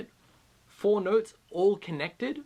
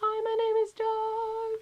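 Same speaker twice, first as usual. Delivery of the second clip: thin, breathy, light falsetto, very high and very slow. Explaining falsetto versus head voice, demonstrating a very light falsetto tone. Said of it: "the falsetto is a very light tone".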